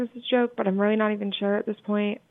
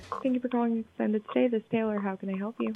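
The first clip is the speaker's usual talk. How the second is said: quiet, tiny, small mouse-like voice; 5 dB quieter than usual. Answering a phone call at the front desk: quiet mousy voice. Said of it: "You sound like a mouse".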